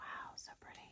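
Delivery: very soft, hushed, barely voiced whisper. Showing off earrings, the speaker admires them, whispering. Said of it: "I don't know why I'm whispering".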